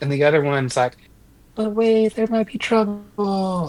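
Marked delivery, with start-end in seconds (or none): 1.6-3.7 slight little hushed voice, high, slow stage whisper. Describing two inner voices, the cautious one: imitating a slight little half-whisper. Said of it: "like a slight little whisper".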